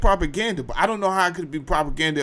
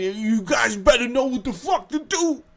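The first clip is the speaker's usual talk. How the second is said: mock lady's high, rising yell; 8 semitones higher than usual. Retelling a foster mother warning the kids before a visit: imitating a woman yelling. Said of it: "She's yelling".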